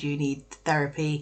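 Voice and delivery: ordinary talk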